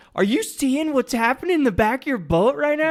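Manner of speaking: shrill, very high shouted yell. Retelling calling out to another boat while passing it, imitating own yell. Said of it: "I yelled at the guy".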